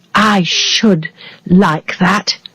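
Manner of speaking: drawn-out, unhurried delivery. Narrator reading a character's reply in a story, spoken very slowly. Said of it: "he said very slowly".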